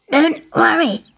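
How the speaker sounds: croaking bullfrog voice. Narrator reads the frog answering a sobbing girl, in a croaking frog voice. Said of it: "croaked the frog".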